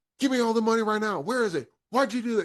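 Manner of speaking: high, fast, pumped-up self-hyping rant.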